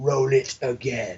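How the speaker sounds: low, soft, commanding voice. Retelling what the actor said on the mic to a crowd that went nuts, Emperor Palpatine voice. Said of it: "in his Emperor voice".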